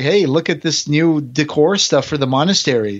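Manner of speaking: plain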